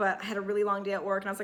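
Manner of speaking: jittery, rushed, rapid-fire fast talking.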